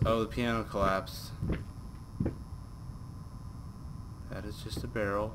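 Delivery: hushed, low volume. Playing a game on stream, nervous, talking very quietly. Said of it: "I'm sorry I'm talking so quietly".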